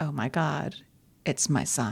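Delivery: plain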